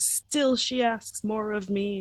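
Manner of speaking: indignant, put-upon tone. Retelling a scene, quoting Corlys: imitating indignant Corlys. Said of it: "And he's all indignant".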